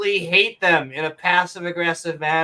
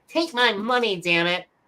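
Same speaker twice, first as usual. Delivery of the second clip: cartoon voice, pitched up; 5 semitones higher than usual. Attempting a Futurama line as an impression: Fry impression. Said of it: "I do a fry".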